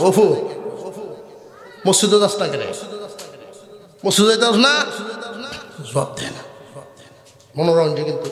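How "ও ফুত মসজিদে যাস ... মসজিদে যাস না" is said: plain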